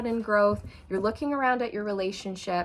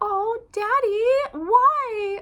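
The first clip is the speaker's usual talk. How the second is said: very high, loud, manipulative whiny wheedling; 13 semitones higher, 7 dB louder than usual. Retelling how someone begs for handouts, imitating a whiny, manipulative voice. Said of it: "Like in the whiniest, most manipulative voice".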